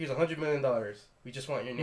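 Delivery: normal talking voice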